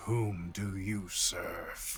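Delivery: icy, eerie, low, hushed creature voice. Narrator voices a mouthless creature addressing the players: cold creature voicing. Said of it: "this cold voicing".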